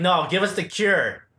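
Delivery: ordinary talk, nothing marked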